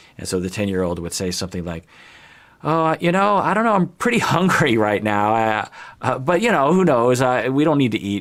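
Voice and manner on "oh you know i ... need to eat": put-on very tentative, hedging, pitched up. Acting out a hungry child hinting at dinner: imitating a tentative, hedging voice. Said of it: "you say it in that very tentative way".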